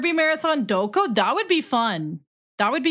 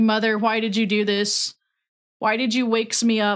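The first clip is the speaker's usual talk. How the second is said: put-on mad, angry cat voice. Speaking for Booker the cat, just woken up: voicing Booker the cat, put-on mad. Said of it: "He's mad".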